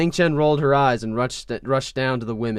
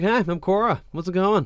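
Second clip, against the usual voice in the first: hi said slightly sarcastically, pitched up; 7 semitones higher than usual. Showing what Korra is like as she introduces herself, do a put-on, slightly sarcastic Korra voice. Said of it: "she's a little like um, sarcastic, like a little bit like that".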